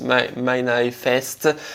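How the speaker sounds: put-on slow, halting, clumsy English accent.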